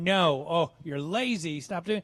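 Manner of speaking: nagging, scolding, telling-off tone. Retelling the voice of mom still heard in adulthood: imitating mom scolding. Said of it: "I hear my mom's voice going".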